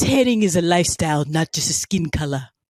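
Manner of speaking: put-on low-pitched, poorly done baby voice. Quoting a favorite comedy line, doing a bad Stewie impression. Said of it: "terrible impersonation impression".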